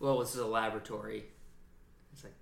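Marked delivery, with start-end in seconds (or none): 0.0-1.2 imitated flat, deadpan delivery. Retelling a tv episode, the speaker quotes a guy, imitating deadpan delivery. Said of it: "the guy did it so deadpan too".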